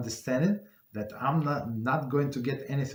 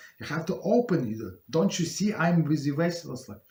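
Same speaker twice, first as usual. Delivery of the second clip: play-acted, yelling, scolding tone; 4 semitones higher, 4 dB louder than usual. Retelling how the lady at the counter yelled at the speaker, imitating a woman yelling. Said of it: "She started yelling".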